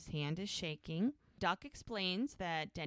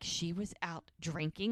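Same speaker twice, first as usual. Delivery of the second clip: ordinary delivery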